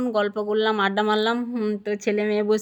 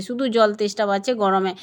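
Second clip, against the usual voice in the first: normal talking voice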